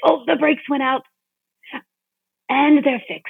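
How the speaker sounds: weird, odd put-on British accent. Retelling a line said while walking him to the bathroom, in a weird British accent voice. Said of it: "a like a really weird, like British accent kind of voice".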